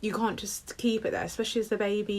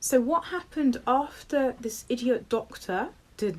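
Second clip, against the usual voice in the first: ordinary talk, nothing marked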